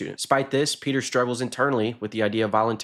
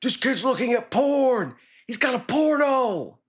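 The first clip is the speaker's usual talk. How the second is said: very high, shrill, accusing, drawn-out yell; 14 semitones higher than usual. Retelling how a high schooler on the bus reacted: imitating a high schooler yelling. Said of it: "just starts yelling".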